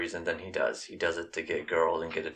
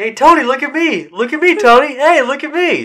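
put-on very high, very loud childish holler; 19 dB louder than usual. Retelling how a character begged Tony to look at him: imitating Bobby like a five-year-old. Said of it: "Like a five-year-old".

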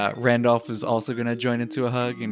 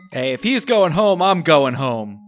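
shouting, yelling in a character voice; 5 semitones higher, 8 dB louder than usual. Voicing a character who shouts that he is going home too: shouting as Randolph. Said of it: "Randolph shouts".

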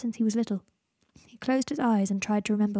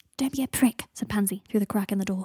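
ordinary delivery, nothing marked

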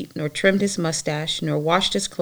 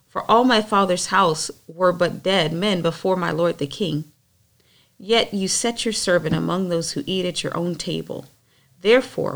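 ordinary talk, nothing marked

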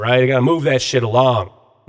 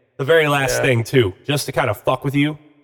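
normal talking voice

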